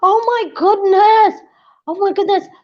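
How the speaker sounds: startled, very high, shocked shouting. Interrupted mid-discussion by something startling, shocked shouting. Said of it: "Sorry, sorry, I'm shouting".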